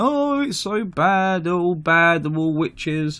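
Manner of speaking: mock blubbering crying whine. Retelling how traders complained after getting wiped out: imitating crying traders. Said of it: "they come out crying".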